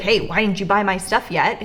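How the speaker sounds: ordinary delivery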